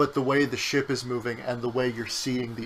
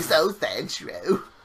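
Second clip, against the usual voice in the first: put-on elderly woman voice; 4 semitones higher, 3 dB louder than usual.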